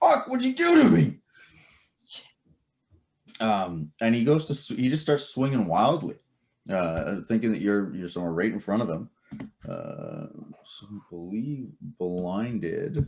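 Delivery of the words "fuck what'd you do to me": high, loud, pained scream. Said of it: "he's screaming a little bit in pain".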